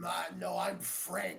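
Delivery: very deep, angry character voice. A green bolt character introduces himself, in a very deep angry voice. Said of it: "a very deep, angry voice".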